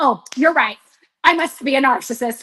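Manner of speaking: ordinary talk, nothing marked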